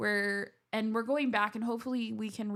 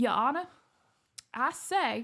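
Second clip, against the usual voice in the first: cartoon rooster impression voice; 4 semitones higher, 4 dB louder than usual. Retelling how a guy spoke at court hearings, in a Warner Brothers cartoon rooster voice. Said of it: "he would be like".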